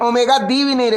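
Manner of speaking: ordinary talk, nothing marked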